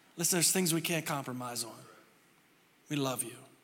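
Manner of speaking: gentle, loving, very low soft tender voice. Showing how to say it the way he says it to his kids, tender. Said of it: "It's the way I say it to my kids".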